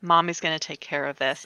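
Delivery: ordinary delivery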